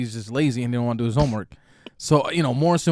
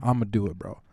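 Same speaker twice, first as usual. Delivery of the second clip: put-on confident voice, lower and quieter; 5 semitones lower, 5 dB quieter than usual. Retelling how the boy took on the haircut bet: imitating someone sounding confident. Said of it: "he's confident".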